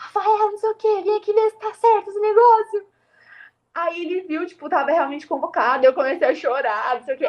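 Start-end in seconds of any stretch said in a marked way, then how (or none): 0.0-2.9 mock yelling in a high, calling shout. Retelling the moment, the speaker re-enacts shouting to their brother, retelling a shout. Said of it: "aí eu gritei assim".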